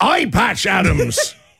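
put-on swashbuckling sea-dog pirate voice. Giving the pirate's version of the movie Patch Adams, in a pirate voice. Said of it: "the pirate's got a version of that".

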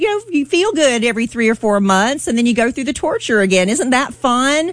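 sarcastic tone.

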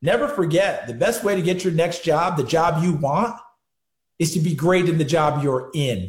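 ordinary delivery

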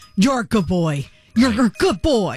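firm, authoritative, commanding delivery. Demonstrating saying nice things to a dog, in an authoritative voice. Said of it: "but you say it in an authoritative voice".

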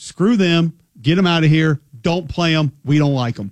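ordinary delivery

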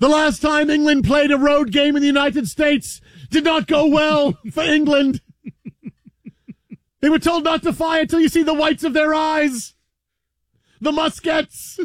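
mock grand, stately commentary voice.

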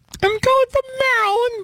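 very high, squeaky, mousy little voice. A radio caller tells the host where she is calling from, in a squeaky high voice. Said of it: "She sounds like Minnie Mouse".

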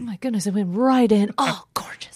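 put-on golf commentator voice. Playing along with a co-host about calling a golf match: golf commentator voice. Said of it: "I always think that would be really fun to be like".

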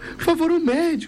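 high, desperate yelled shout.

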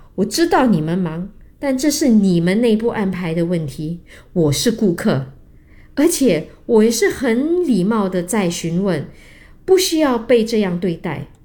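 plain

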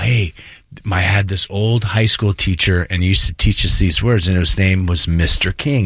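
ordinary delivery

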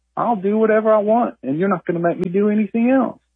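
cool, unstartled, nonchalant, unbothered bear voice. Voicing a bear caught in the trash: nonchalant bear voice. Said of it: "very nonchalantly, very unstartled".

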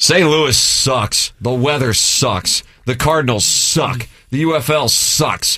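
high, slow, grumpy complaining tone. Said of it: "that's from Doug Glatton".

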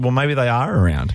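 ordinary delivery

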